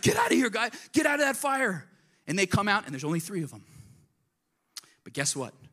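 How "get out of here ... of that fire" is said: put-on shrill, loud, very high commanding shout. Retelling a bible story, the emperor calls them out of the fire: imitating a king yelling. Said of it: "he yells".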